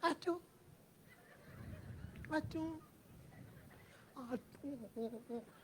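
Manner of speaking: skinny, thin, wispy voice, almost whispered. Imitating thin girls hailing an auto on the road, very thin slight voice. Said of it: "एकदम दुबली पतली आवाज में ऑटो रोक रही है".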